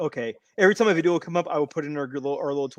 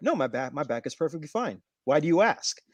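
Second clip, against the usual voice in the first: calm, unbothered, even-toned delivery. Retelling a toy-aisle exchange, imitating Danhausen answering calmly. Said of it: "calmly, just calmly".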